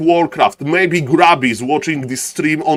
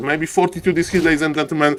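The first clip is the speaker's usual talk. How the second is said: normal talking voice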